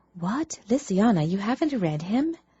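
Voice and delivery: squeaky, high half-whisper, half-squeal. One of the twins speaks up to Luciana; half-whisper, half-squeal. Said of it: "that half-whisper, half-squeal".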